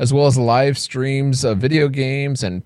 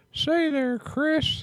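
put-on old man voice, much higher, quieter; 14 semitones higher, 8 dB quieter than usual. Demonstrating the voice people think he is doing, an old man voice. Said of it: "people think I'm doing the old guy".

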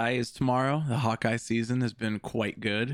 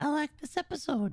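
very high, squeaky little animal voice; 3 dB quieter than usual. Voicing an audience member's comment: squeaky little animal voice. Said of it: "That was your voice".

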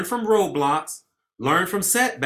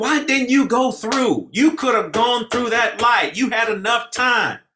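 play-acted, high-pitched, berating yell; 6 semitones higher, 4 dB louder than usual. Speaker recalls yelling at drivers who didn't go through a light: retelling yelling at drivers. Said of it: "And now I'm yelling at them".

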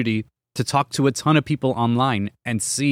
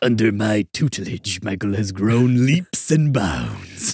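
cartoon villain voice with big swooping pitch swings; 3 semitones lower than usual. Host talking about now being married, speaking in a Shredder voice. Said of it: "like the Shredder voice?".

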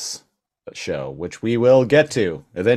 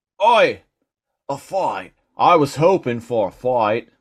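high, put-on Australian accent; 6 semitones higher, 3 dB louder than usual. The speaker voices a character in an Australian accent. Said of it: "the Australian".

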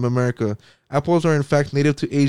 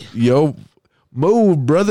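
mocking moo, louder; 2 semitones higher, 5 dB louder than usual. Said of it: "is that what you fucking say?".

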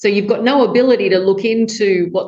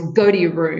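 put-on, slow, really intense delivery; 2 semitones lower than usual. Describing a father coming home to his child, retelling an intense command. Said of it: "he says with real intensity in his voice".

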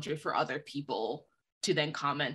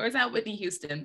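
high, put-on old-lady Southern accent; 6 semitones higher than usual. Retelling a video of a little girl, the speaker quotes her in an old lady Southern accent. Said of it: "in this really old lady Southern accent".

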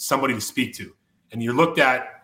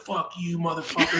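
mock screaming, thrown up high; 5 semitones higher, 5 dB quieter than usual. Retelling a woman on the rushed field: imitating someone screaming. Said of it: "She's screaming at me".

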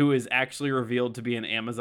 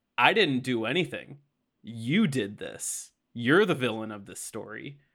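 mock smug, self-satisfied know-it-all villain gloating. Retelling a fight scene where Reverse Flash answers Barry: smug Reverse Flash voice. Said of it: "He's so smug".

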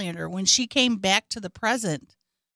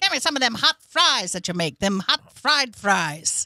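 fake old-fashioned voice. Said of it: "Does he talk old-timey?".

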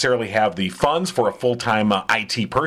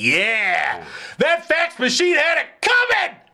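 very high, swooping, long drawn-out yell. Retelling a reaction to a favorite movie scene: yelling. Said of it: "Don't yell so loud".

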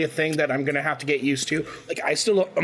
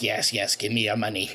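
little put-on goblin voice, lower; 7 semitones lower than usual. Describing a goblin in the Hogwarts game, the speaker does a little goblin voice. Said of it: "the little goblin's like".

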